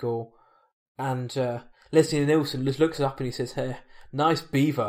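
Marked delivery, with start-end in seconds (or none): none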